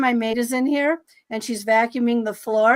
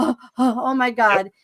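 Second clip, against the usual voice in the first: overheated, slow, drawn-out panicked dread. Retelling lying in bed during a panic attack: imitating panic. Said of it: "panic attack ... really super hot and really super sweaty".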